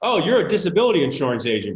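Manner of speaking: usual speaking voice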